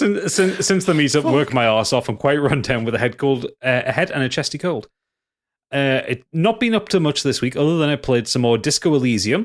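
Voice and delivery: plain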